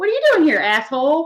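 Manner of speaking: high-pitched parrot-style voice. Retelling what the parrot said on arrival home: imitating a parrot in Abby's voice. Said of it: "it said it in her voice".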